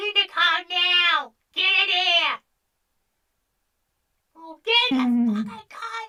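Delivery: very high, loud put-on yelling voice. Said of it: "Leggy impression".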